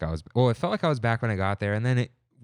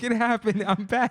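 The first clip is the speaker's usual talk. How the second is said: put-on excited screaming, higher; 11 semitones higher than usual. Retelling how Kimmy screamed in the street after tripping: imitating Kimmy screaming. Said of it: "she's screaming in the middle of Buena Vista Street".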